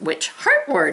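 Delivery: word heart said with rising, questioning tune. Showing how to read the line aloud: reading like a question. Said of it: "we gotta read it like a question".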